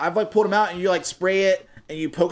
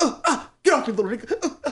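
mimicked heavy breathing, higher pitch; 7 semitones higher than usual. Imitating a kid who runs around dodging little kids: imitating a kid's weird breathing. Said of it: "he does all the weird breathing".

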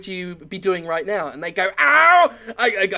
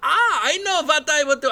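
failed German accent attempt, pitched up; 8 semitones higher than usual. Acting out an imagined good Hitler's answer: attempted Hitler accent. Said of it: "I can't do the accent".

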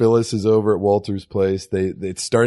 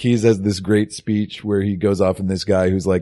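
usual speaking voice

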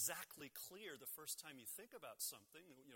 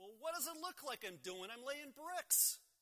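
very high, loud, exasperated, annoyed voice; 9 semitones higher, 6 dB louder than usual. Retelling a story, playing the first bricklayer answering the man's question, mock-annoyed. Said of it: "in kind of an annoyed voice".

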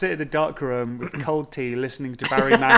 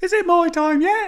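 put-on childlike Birmingham voice, much higher, louder; 14 semitones higher, 5 dB louder than usual. Voicing a small child calling out in the vampire story, in a childish Birmingham voice. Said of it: "It's like a childish a Birmingham child".

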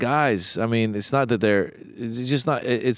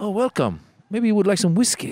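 calm, cool, courteous mafia-style voice, pitched up; 9 semitones higher than usual. Acting out a grandfather calmly receiving a boy: mock mafia-style calm. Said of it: "Like very like mafia style".

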